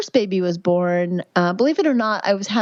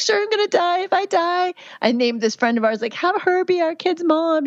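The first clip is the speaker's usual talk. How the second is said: mock crying, very high and tearful; 10 semitones higher than usual. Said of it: "I'm crying".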